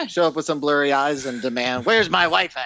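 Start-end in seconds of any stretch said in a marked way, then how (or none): 1.9-2.7 put-on vintage, old-timey nineteen-twenties-style voice. Acting out showing up with blurry eyes at a wedding: 1920s-style voice. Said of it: "I love that voice".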